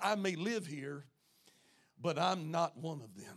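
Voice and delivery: mock muttered aside. Acting out Moses walking palace hallways: muttering under breath as Moses. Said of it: "he would say under his breath".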